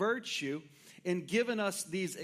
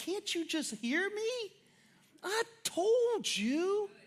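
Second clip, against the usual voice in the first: mock very high, drawn-out, slow desperate pleading; 13 semitones higher than usual. Retelling how a young son says a line: imitating a child pleading desperately. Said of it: "pleading with you in, in desperation".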